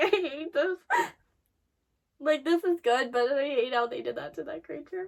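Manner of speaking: tearful speech coming through crying. Reacting while watching a show, crying. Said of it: "I'm already crying".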